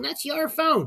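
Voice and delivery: mock screaming voice. Retelling a student's mom on the phone: imitating a mom screaming. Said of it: "you could hear her screaming".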